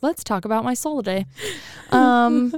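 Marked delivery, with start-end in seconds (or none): none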